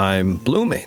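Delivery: slowly realizing tone. Showing how most readers deliver the line: internal discovery reading. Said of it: "an internal discovery".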